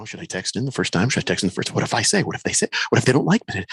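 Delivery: fast, anxious, rattled-off nervous fretting. Imitating listeners wondering whether to text in: imitating nervous listeners. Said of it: "they get nervous".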